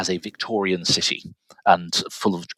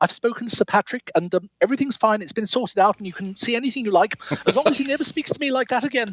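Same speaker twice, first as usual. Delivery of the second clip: very high-pitched, upset, distressed voice; 13 semitones higher than usual. Retelling the club librarian's distressed phone call, imitating a very high-pitched voice. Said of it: "in a very high pitched voice saying".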